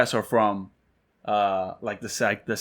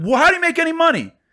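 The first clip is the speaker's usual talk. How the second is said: shrill, very high-pitched raised voice; 5 dB louder than usual. Retelling a sales call, raising the voice at the customer: retelling a raised voice. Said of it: "Everyone's head just snapped".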